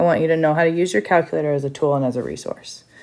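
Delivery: talking really fast, rattled off. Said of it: "I'm sorry if I talked really fast".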